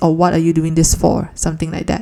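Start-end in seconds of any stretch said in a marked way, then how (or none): none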